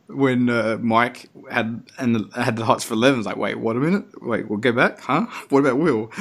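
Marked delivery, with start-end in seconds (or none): none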